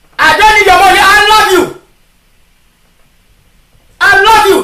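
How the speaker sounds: impassioned, fervent preacher-style delivery. The speaker tells brothers and sisters what god has shown them: shouting. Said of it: "That is why I'm shouting".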